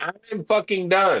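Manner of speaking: play-acted fed-up angry outburst. Describing a man's videos, the speaker imitates him angrily saying he's done. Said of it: "We watch him be angry".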